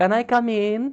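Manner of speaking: put-on small, high young girl's voice. Narrating a knock at the door as a girl asks in, young girl's voice. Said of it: "you hear a young girl's voice as she says".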